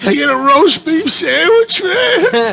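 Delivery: acted breathless, out-of-breath, high-pitched voice. Comedian retelling ordering at an Arby's counter, imitating being out of breath. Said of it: "I'm out of breath".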